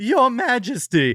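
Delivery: hammy theatrical voice. Reviewing a play, mocking one actor's overdone delivery: imitating the Chancellor's voice cracking. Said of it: "the Chancellor's incessant voice cracking".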